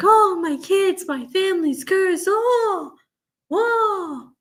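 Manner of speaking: put-on very high, drawn-out weepy sobbing wail. Describing a defendant crying in court, imitating someone crying. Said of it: "who's been crying like".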